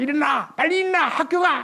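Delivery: high-pitched mock yelling.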